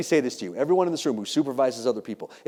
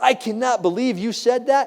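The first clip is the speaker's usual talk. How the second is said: furious, shrill, very high, slow angry yell; 10 semitones higher than usual. Retelling what an upset cop in the book-signing line said: imitating a cop yelling. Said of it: "He wants to yell at me".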